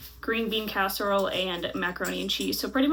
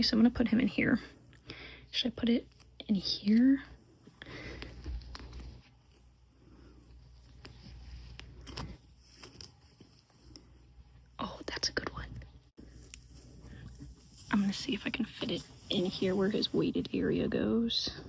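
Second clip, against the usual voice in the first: hushed whisper, much quieter; 5 dB quieter than usual. Hiding a stuffed toy so someone nearby can't hear, whispering. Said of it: "I'm whispering so David can't hear me".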